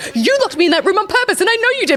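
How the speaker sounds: high-pitched, heated, accusing tone.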